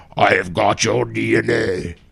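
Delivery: slow, gravelly superhero voice, ground out. Friends joke about how a man delivered his line; one tries a gravelly Batman voice. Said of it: "in like a gravelly voice like Batman".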